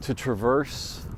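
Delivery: plain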